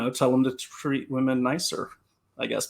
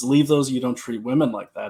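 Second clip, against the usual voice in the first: ordinary talk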